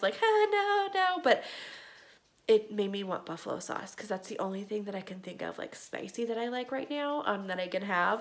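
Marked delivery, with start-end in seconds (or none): 0.2-1.2 high-pitched, jokey, laughing voice. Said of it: "Well, jokingly, I was like".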